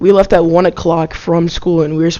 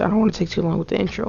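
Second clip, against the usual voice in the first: soft voice cracking partway through the line; 2 semitones higher, 8 dB quieter than usual. Opening the first video on a new channel, voice cracking. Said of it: "My voice just cracked".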